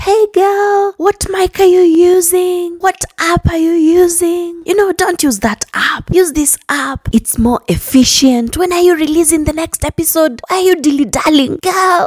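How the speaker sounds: very high-pitched, gushing, eager enthusiasm. Retelling how a fellow podcaster pushed her to release episodes: imitating an enthusiastic friend. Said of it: "she's very enthusiastic".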